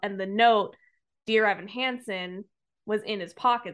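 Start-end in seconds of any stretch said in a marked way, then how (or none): none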